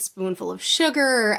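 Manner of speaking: ordinary delivery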